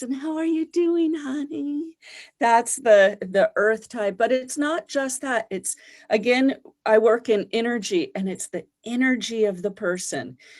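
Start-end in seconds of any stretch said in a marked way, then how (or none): 0.0-2.0 gentle, soft, high preschool teacher voice. Describing how earth types talk, in a soft preschool teacher voice. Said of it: "that really soft kind of preschool teacher voice".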